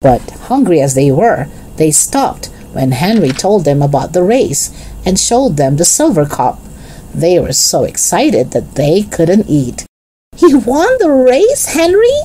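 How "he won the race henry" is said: thrilled, delighted cry pitched very high. Jesse hears henry won the race and asks him, crying out delighted. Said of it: "cried Jesse, delighted".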